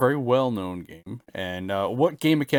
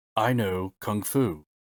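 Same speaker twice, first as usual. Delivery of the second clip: very slow, drawn-out delivery, each word spaced apart; 2 semitones lower than usual. Quoting a line from a film: Keanu Reeves impression. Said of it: "that's my best Keanu Reeves impression".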